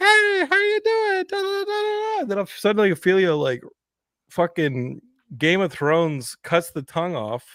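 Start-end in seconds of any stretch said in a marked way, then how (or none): 0.0-2.2 very high hand-puppet voice. Retelling how a relative played with a puppet: imitating Paul's puppet voice. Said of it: "Paul is sitting there with the puppet going".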